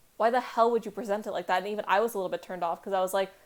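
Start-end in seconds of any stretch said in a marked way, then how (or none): none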